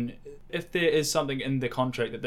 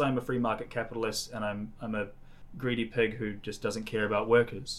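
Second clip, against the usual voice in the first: normal talking voice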